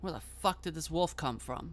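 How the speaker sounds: usual speaking voice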